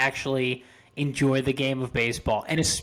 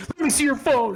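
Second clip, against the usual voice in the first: mock drunken shouting, higher; 11 semitones higher than usual. Acting out a reprimanded drunk person who shouts at everyone: imitating a drunk person shouting. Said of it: "shouts at everyone around them".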